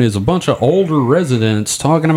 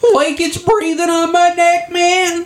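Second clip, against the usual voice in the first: full cartoon sidekick voice, very high. Describing ghost hunts as if everyone were Shaggy, in a Shaggy voice. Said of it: "You're going to have to do an entire episode in that voice".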